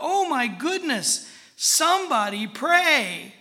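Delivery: desperate, urgent, very loud high shout, "pray" drawn out. Telling a story about a youngster near a door, retelling his desperate shout. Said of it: "in desperation and with urgency, in his voice shouted".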